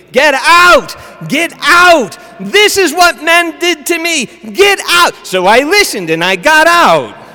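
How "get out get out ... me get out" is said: shrill, frantic, very high screaming. Retelling a patient's outburst when he walked in: imitating a woman screaming. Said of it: "she started screaming".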